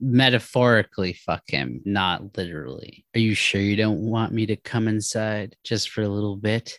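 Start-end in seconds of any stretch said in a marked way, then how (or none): 3.1-6.8 put-on velvety smooth voice. Retelling a guy's line to a woman, in his velvety smooth voice. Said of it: "In his velvety smooth voice".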